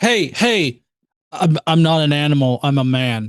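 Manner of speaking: slow, dragged-out, stumbling, stammering, insistent delivery. Imagining someone calling in to a show: imitating a caller. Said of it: "can you imagine calling in to somebody and being like".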